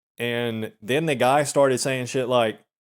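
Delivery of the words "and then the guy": plain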